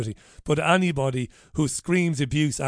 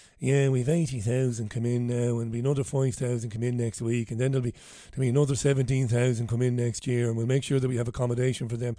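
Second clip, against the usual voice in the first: flat, droning monotone with no tune; 3 semitones lower, 3 dB quieter than usual. Mocking a clip just played, imitating Jack Chambers' monotone. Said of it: "That monotone, that monotonous arsehole, Jack Chambers".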